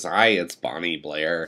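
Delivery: slow, sick-sounding, under-the-weather sore-throat voice. Joking that a sick throat sounds like the woman from the Bay: imitating her. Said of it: "the woman from the Bay. You know, she goes".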